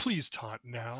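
courteous, polite flight-attendant announcer voice. Recalling a game, imitating Charity's flight-attendant voice. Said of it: "She sounded like a flight attendant".

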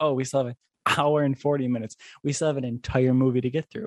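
ordinary talk

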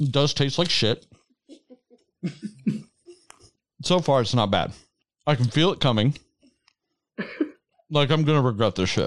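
speaking with mouth full, mid-chew. Trying something on the podcast after a countdown, talking while chewing. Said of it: "And I want to stop chewing".

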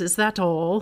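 lovely, beautiful put-on British accent. Retelling what a friend said after a confession: imitating a British accent. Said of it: "in the most beautiful British accent".

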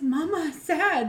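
put-on high young child voice. Retelling watching Toy Story with Jackson: imitating Jackson. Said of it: "And he's".

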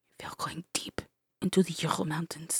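put-on mixed French and Russian accent. Voicing a character talking to his mom about a trip: put-on French-Russian accent. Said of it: "What is that accent?".

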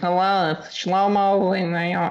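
exaggerated nasal voice.

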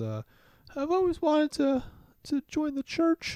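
character voice with hiccups. Voicing Clarice as she looks at Dunder about the church, Clarice hiccuping.

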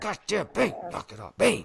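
hissing whisper-shout. Showing how they hiss at their dog too, hissing whisper-shout. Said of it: "I catch myself doing it too".

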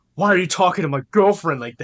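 loud, jealous, confrontational voice. Mocking a boyfriend who feels threatened by other men: imitating an overprotective boyfriend. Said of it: "You're like".

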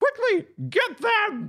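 pitch goes up high and swoops around. Narrating a scene as they go, the speaker does a Kermit voice. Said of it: "this is in Kermit's voice".

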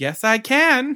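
very high, loud, cheeky, sassy voice. Retelling a movie scene where the beast pounds on her door, imitating Belle's sassy reply. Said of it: "the way the way she says it is so sassy".

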